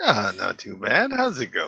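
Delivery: cheery, good-humoured, jovial, animated and sing-song. Guest welcomed onto the stage, greeting the host: jovial voice. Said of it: "this jovial voice".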